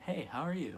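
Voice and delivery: bright, cheerful, very high happy voice. Showing how tones push emotions, greeting the guys in a happy tone. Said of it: "If I'm mad".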